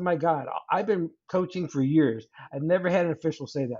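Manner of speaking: ordinary talk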